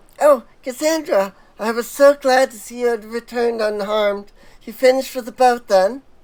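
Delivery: high-pitched, lifted villager character voice. Player voices a game character greeting Cassandra on her return: Matsuya high-pitched voice. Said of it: "Matsuya had that like high pitched voice".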